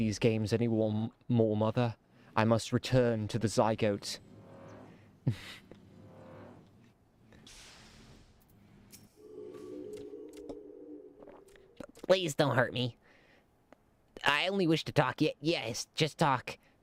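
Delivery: low, tiny creature little guy character voice. Voicing a character, little guy voice. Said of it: "I do like little doing the little guy voice".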